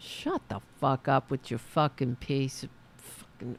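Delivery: furious burst of swearing. Reacting to a played recording of a political robocall: angry cursing outburst. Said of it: "I'm sorry for cursing you two".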